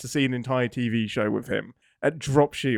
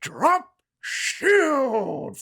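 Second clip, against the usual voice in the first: very high, over-the-top, booming captain bellow; 13 semitones higher than usual. Retelling a captain's line from the show, imitating Ransom's bellow. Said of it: "he just bellows".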